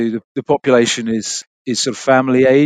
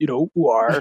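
Somerset accent on the word war. Speaker showing what people elsewhere in the UK expect, in Somerset accent. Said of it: "which is a bit like this".

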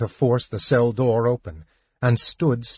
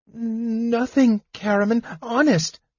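gasped out, very high pitch; 11 semitones higher than usual. The narrator reads a character's answer to the big man's question, gasping. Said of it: "Tass gasped".

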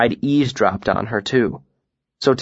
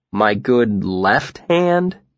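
dubious, doubtful tone. A narrator reads the narrator replying to a woman inspecting their hands: dubious. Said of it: "I asked dubiously".

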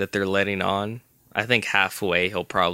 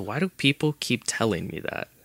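mock-calm, acted calm delivery; 2 semitones higher than usual. Retelling a scene, acting out the captor's answer to a pleading man: retelling a calm reply. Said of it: "he just kind of calmly says".

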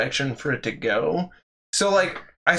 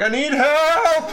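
very high, shrill yell; 14 semitones higher, 4 dB louder than usual. Recalling a girl during library projects, imitating her yelling for the librarian. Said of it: "yell for the librarian".

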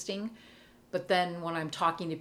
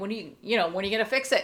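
complaining voice, higher and louder; 3 semitones higher, 5 dB louder than usual. Retelling complaining to the Lord while lying on the floor: imitating own past complaining. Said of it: "'Cause I was complaining".

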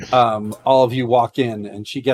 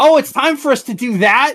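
put-on very high, loud little girl voice; 13 semitones higher, 5 dB louder than usual. Voicing an eleven-year-old girl who runs in to line up: voicing a little girl. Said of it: "The little kid runs in and says".

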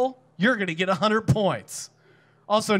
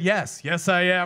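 mock glum, downcast, slow and sad; 2 semitones lower than usual. Retelling a stand-up story, imitating a sad reply. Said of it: "this sad albino guy turned to me and said".

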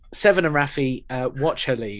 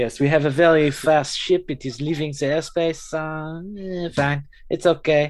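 exaggerated, very bad French accent. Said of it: "it's very bad French accent".

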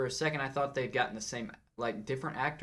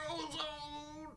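put-on very high, blurted-out old-man holler; 12 semitones higher, 10 dB quieter than usual. Imitating a line from a movie: old man Craig T. Nelson yelling. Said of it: "He just starts yelling out stuff".

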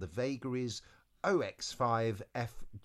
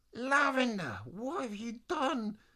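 very high, frustrated shout; 12 semitones higher, 3 dB louder than usual. Reading a story aloud, Eliza frustrated and calling to no one, shouting. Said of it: "Eliza shouted to no one in particular".

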